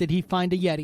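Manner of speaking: ordinary delivery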